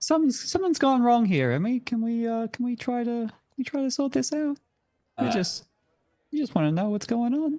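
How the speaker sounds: very high, sweet-talking, charming coaxing voice. Talking a character into dropping a knife: charming voice. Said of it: "that's my charming voice".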